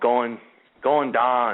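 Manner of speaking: bad, poor Pennsylvania Dutch accent. Imitating a voice caught on an EVP recording: bad Pennsylvania Dutch accent. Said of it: "I don't do a very good, uh, Dutch accent".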